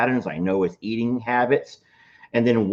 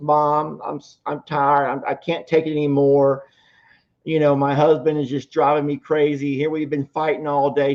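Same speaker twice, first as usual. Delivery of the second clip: mock high-pitched tearful sobbing; 5 semitones higher than usual. Telling a joke, voicing a daughter calling her mom: imitating a crying daughter. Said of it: "her daughter's just crying and she's crying".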